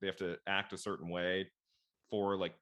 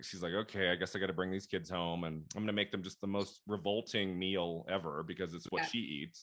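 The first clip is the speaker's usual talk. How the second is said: ordinary delivery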